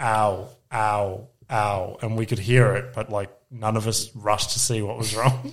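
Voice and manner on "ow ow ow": flat, level, uninflected string of ows. Retelling hearing the kid call out from the couch, imitating Parker's monotone ow. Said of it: "it was just like monotone".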